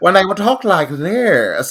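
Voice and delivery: words stretched out in a mid-Atlantic accent. Speaker discussing an actress playing a grandmother, demonstrating a Katharine Hepburn mid-Atlantic accent. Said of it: "It's mid Atlantic from like the from the nineteen forties".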